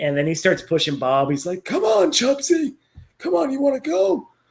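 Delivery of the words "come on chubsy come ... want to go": put-on very high-pitched old man's voice. Retelling a scene where an old man pushes another: imitating an old man's voice. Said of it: "And that's how he talks".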